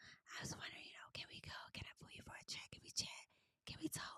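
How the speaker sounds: breathy whisper, barely voiced, hushed and very quiet. Retelling what a cast member said to him, imitating someone whispering. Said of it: "She about pissed me off just whispering".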